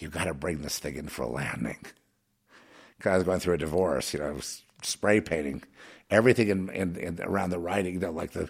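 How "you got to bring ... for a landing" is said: put-on near whisper, lower and quieter. Retelling a scared friend's warning: imitating Rick Fry almost whispering. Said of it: "he almost whispering to me".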